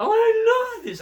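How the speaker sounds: squeaky, very high, very loud little dog voice. Speaking for a puppy getting its neck scratched: voicing a puppy. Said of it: "Katie the puppy, like".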